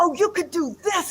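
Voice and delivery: very excited, high, fast voice. Retelling what was said to a student: imitating own excited remark. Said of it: "I'm saying it in a very exciting way".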